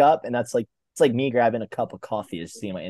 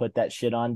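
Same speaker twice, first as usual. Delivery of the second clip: plain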